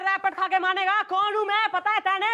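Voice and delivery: shouting. Playing a comedy scene, demanding of another character who they are: yelling. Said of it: "चिल्ला क्यों रही है?".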